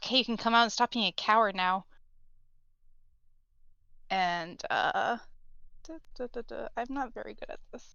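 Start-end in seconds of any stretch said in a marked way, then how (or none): 0.0-1.8 loud, forceful whisper pushed out like a shout. Game master voicing a character who just realized who the party is, yell-whispering. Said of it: "she kind of like yell whispers like".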